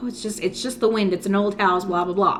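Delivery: ordinary delivery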